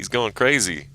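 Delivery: ordinary talk, nothing marked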